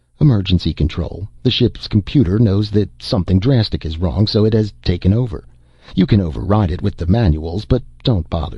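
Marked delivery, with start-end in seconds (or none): none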